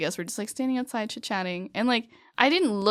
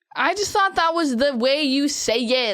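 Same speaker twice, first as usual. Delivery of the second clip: raised, pitched-up voice, speaking up; 6 semitones higher, 6 dB louder than usual. Corrected on how to say mahjong, answering back with a raised voice. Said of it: "don't raise your voice".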